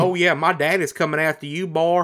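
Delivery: over-the-top Louisiana accent. Mocking a game's overblown accents, the speaker does an over-the-top Southern Louisiana accent. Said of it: "everybody's accents are like this".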